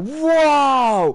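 put-on high, loud, amazed little-kid voice.

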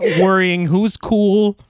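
put-on Minnesotan accent.

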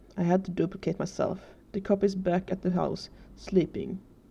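ordinary delivery

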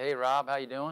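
easy, slight Southern drawl, words drawn out. Speaker retells a phone call from the company CEO, doing Gary's Southern drawl. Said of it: "that's a Southern accent. I'm sorry if it's bad".

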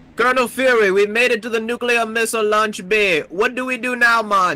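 put-on Jamaican accent throughout. Playing a video game with friends, talking to a game character in a put-on jamaican accent. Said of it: "why the fuck do you sound Jamaican".

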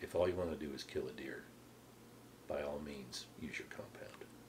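mock deadpan delivery. Retelling another man's answer about his compound bow, retelling a deadpan reply. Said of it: "John just looked at me deadpan".

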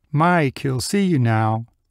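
calm, even, composed, collected tone. The receptionist looks over at Mike after hanging up the phone: calmly. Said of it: "calmly said".

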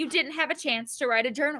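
plain reading voice

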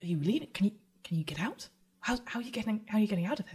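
frightened. Voicing a frightened teen girl asking how to escape: frightened. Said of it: "she looks quite frightened still".

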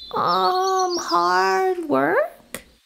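unsure, tentative. Prompted by Grandma to say what she needs, she answers, hesitant reply. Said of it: "Pow Pow hesitantly replied".

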